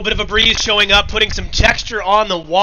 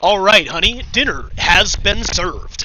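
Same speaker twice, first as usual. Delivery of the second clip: stadium sports announcer delivery. Retelling how he spoke to his wife at home, stuck in announcer voice. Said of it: "stuck in his announcer's voice".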